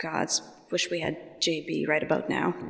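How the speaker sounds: soft whispered aside under the breath. Voicing a frustrated character in the game who whispers to herself: whispering to herself. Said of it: "just whispers to herself".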